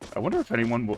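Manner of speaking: voice breaks mid-sentence. A streamer talking to viewers after taking a screenshot, voice cracking. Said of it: "voice crack".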